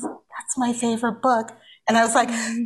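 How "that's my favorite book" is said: gentle, very soft, hushed, barely raised murmur.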